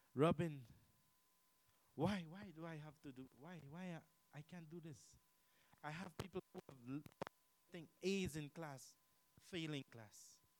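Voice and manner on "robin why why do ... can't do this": tearful, crying, stammering, halting voice. Retelling how students came to the speaker: imitating someone crying. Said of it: "I've had people come and cry to me".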